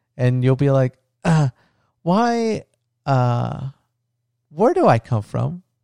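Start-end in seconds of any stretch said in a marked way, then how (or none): 1.3-5.6 put-on slow, halting, stumbling little-kid voice. Acting out a future scene, pretending to be the daughter tugging at him: imitating his daughter Luna. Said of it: "I'll talk like you".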